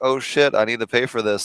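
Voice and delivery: ordinary talk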